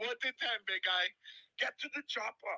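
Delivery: hushed, high tough-guy voice. You are showing off a voice to be rated 1 to 10, doing an Arnold impersonation. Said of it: "I know you're doing an Arnold impersonation".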